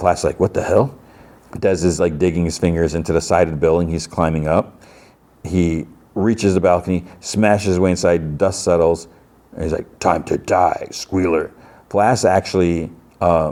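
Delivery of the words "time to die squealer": deep, slow, dragged-out monstrous voice. Telling a story, the speaker voices Des after he smashes inside: deep monstrous Des voice. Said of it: "in a deep, like monstrous voice".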